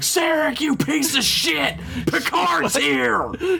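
harsh, very high-pitched screaming. Retelling a scene where Perrin wakes her Vulcan husband: Perrin screaming impression. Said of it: "She fucking screams at him".

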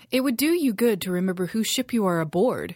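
words spat out, loud and forceful. A woman holding a knife on Liam, spitting the words at him. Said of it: "she spat".

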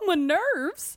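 delicate southern lady voice. Joking about how many tv episodes one's nerves can handle, delicate southern lady voice. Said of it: "you sound like a very delicate Southern lady".

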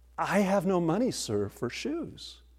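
sheepish, bashful, apologetic, high and slow. The boy with holey shoes answers Martin's offer of new shoes: sheepish. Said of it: "The boy sheepishly said".

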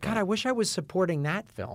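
normal talking voice

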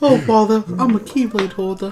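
storybook cartoon bear voice. Describing a game where you play Pooh with a Keyblade: Winnie the Pooh voice. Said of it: "give them fucking Winnie the Pooh voice".

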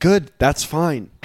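high, loud, easygoing, approving tone.

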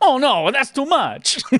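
put-on very high-pitched Brooklyn Italian accent. A player quotes the one game line they remember, in Rabbid Mario voice. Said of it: "really stereotypical Brooklyn Italian accent".

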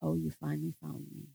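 deep, dark, growly spirit voice. Retelling what a spirit said when the spirit of abuse was called out, dark growly voice. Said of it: "this dark, growly voice said to me".

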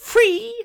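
shrill, piercing, very high-pitched squeal. Hearing the meal deal was free, the speaker repeats it in a very high-pitched voice. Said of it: "in such a high-pitched voice, I sounded like a lorry reversing".

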